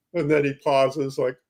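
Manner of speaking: ordinary delivery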